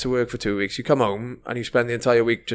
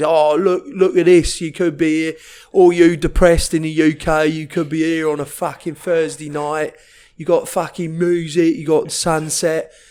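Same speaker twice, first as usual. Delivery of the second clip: loud, pitched-up put-on Essex lad accent; 5 semitones higher, 5 dB louder than usual. Mocking TikToks of a typical Essex lad who's come over: imitating an Essex accent. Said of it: "Good accent".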